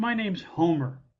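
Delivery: put-on dejected, downcast voice. Retelling how a hitchhiker finally said his name: imitating Homer's dejected tone. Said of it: "and very dejectedly".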